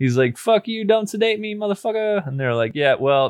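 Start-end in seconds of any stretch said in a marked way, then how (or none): 0.4-2.3 play-acted, very high-pitched, frantic, panicked outburst. Retelling James freaking out in the other room: imitating someone freaking out. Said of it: "James freaking out".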